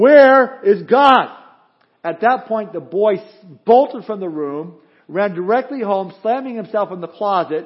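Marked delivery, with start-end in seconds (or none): 0.0-1.3 stern, very loud, high, demanding raised voice. Telling a joke, the pastor shakes a finger at the boy: raised voice. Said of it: "raised his voice even more".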